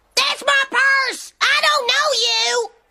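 high-pitched shout. Coached to try again, the speaker shouts back at a purse snatcher: shouting. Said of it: "Try it again".

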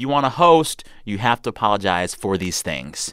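ordinary talk

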